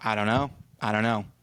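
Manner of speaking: ordinary talk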